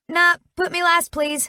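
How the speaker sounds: small, tiny, very high squeaky pleading voice. Reading a story aloud, a character asks to go last: squeaking out the words. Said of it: "I squeak out".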